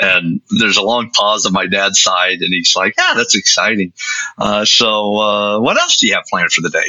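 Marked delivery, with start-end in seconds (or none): 3.0-6.9 mock casual, unbothered tone. Retelling the father's reply to news of an acceptance: imitating a nonchalant reply. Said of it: "very nonchalant".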